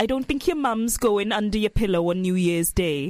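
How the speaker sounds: attempted Welsh accent. Trying the line again after saying the accent fails, attempted Welsh accent. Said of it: "I can't do a Welsh accent".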